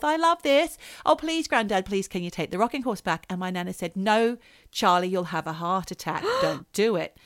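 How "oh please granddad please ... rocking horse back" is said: acted pleading, faster. Retelling how he pleaded with his granddad as a child: retelling a childhood plea. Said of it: "I pled with him".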